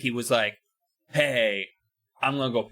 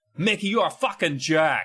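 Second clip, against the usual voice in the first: put-on Boston accent; 5 semitones higher than usual. A speaker acts out one person insulting another, in a boston accent. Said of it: "my Boston accent actually is, works".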